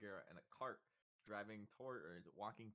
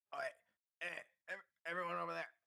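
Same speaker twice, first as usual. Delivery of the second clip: rough, rasping, raspy, high yelling; 8 semitones higher, 10 dB louder than usual. Voicing a stranger calling the party for help: raspy yelling voice. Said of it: "a voice rather raspy yelling at you".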